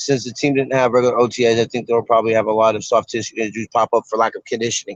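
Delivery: low, fast, mumbled delivery.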